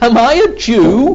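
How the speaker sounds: slow sneering voice. Retelling a biblical trial scene, voicing the reply, acting out a scornful reply. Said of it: "You can hear the scorn in his voice".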